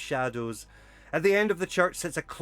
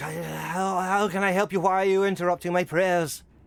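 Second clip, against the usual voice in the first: worn-out, rasping, hoarse, weak, monotone voice; 4 semitones higher than usual. Voicing a tired priest interrupted at prayer: hoarse, weak voice. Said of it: "with a very hoarse and, and weak voice".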